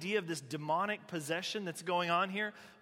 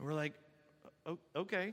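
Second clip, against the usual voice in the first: ordinary talk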